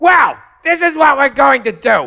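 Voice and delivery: character voice pushed very high. Mocking hack comics' impressions: Gilbert Gottfried impression. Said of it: "You just did it. You crushed it".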